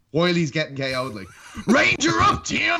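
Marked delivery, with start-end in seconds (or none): 1.7-2.8 very high crowd-style screaming. Retelling a front-row fan yelling at Tim Kennedy during a fight: imitating a fan screaming. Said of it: "starts screaming at Tim Kennedy".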